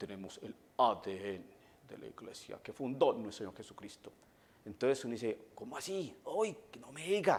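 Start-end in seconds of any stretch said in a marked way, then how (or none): 0.0-4.1 very deep, low radio announcer voice. Quoting what Protestant brethren claim, in a radio announcer voice. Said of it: "así con voz de locutor".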